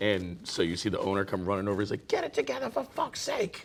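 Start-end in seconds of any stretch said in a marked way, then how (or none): 2.1-3.6 very high, harsh, rough angry outburst. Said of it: "he really talked like that".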